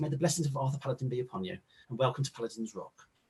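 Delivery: very soft-spoken, gentle, hushed voice. Narrating a scene, the speaker voices a woman who walks over, hands together: very soft-spoken voice. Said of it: "she's got a very soft spoken voice".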